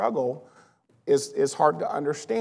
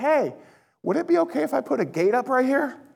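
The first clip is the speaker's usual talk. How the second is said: high, fast calling out. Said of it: "he yells at me and goes".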